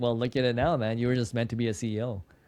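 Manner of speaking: ordinary talk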